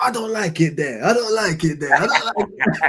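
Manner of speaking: put-on strong Italian accent. Retelling what an Italian hotel receptionist said: imitating a strong Italian accent. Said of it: "strong Italian accent".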